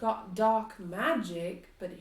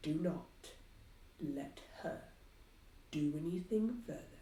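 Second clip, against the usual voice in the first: hushed, secretive whisper; 5 semitones lower, 9 dB quieter than usual. In a game scene, a woman warns someone about another woman, whispering. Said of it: "She whispers that to you".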